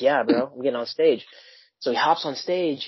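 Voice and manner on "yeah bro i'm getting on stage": put-on play-acted thrilled, eager, excited kid voice. Retelling how a kid jumped up at a show: imitating an excited kid. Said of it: "he's all excited".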